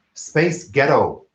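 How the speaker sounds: speaking in an American accent.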